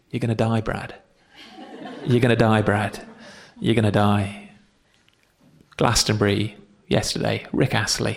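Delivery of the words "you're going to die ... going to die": hushed half-whisper, words repeated. Acting out a little nobody standing behind an Oscar winner: half-whispering. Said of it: "a little nobody just whispering".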